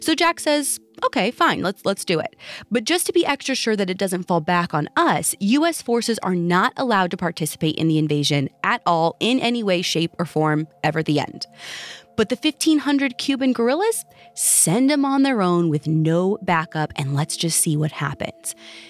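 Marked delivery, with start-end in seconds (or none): none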